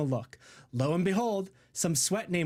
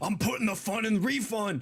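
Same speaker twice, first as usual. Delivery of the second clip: mock crazed, mad tone, pitched higher; 3 semitones higher than usual. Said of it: "in, like, a mad sort of tone".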